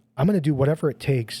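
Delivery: ordinary talk, nothing marked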